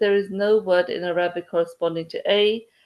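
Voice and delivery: plain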